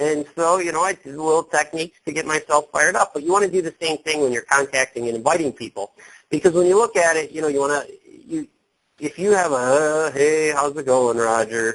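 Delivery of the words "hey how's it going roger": put-on low-energy voice, much slower. Coaching people on inviting contacts, showing how not to sound: sounding like Eeyore. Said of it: "if you sound like Eeyore".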